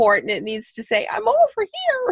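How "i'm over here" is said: tiny, sweet, cute cartoon voice, very high pitched. Suggesting what a device's locator button should say, in a little Disney voice. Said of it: "in this little Disney voice".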